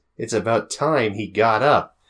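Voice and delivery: ordinary talk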